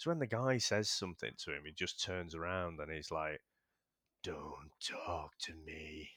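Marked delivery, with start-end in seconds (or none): 4.2-6.1 low, slow, sinister delivery. Retelling a film scene where the villain answers a guy: sinister Kurgan voice. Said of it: "he's just got that sinister v-, voice".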